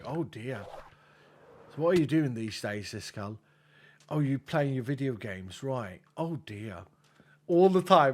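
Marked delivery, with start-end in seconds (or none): 0.1-6.8 imitated English accent. Retelling what an English uncle always says: imitating Uncle Gray. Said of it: "He's like".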